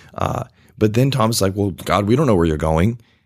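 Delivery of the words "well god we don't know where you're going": fast, grumpy, rattled-off delivery. Retelling a Bible scene, acting out Thomas answering Jesus: put-on grumpy Thomas voice. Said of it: "that's my Thomas, grumpy voice".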